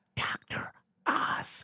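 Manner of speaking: hushed, breathy whisper. Confessing what they used to watch, whispering the name 'Doctor Oz'. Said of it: "I'm going to whisper this name".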